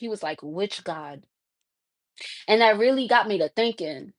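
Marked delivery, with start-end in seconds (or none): 0.4-1.2 very quiet, low, hushed under-the-breath mutter. Retelling what a stranger said back: imitating someone muttering. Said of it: "he said it under his breath".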